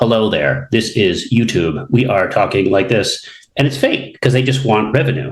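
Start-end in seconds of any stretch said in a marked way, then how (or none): 0.0-3.3 synthetic, robotic text-to-speech narration voice. Speaker mocks phony YouTube videos that use an auto voice, robotic auto voice. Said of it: "like auto voice".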